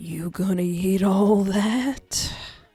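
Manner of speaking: deep, low, breathy voice. Narrator voicing a male character's question, deep and breathy voice. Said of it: "That's my best deep and breathy".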